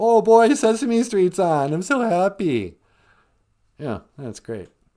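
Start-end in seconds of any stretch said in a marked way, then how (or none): 0.0-2.8 put-on high, loud little-kid glee. Acting out a kid who hears Sesame Street is on: imitating a happy little kid. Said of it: "in that dumb little kid way".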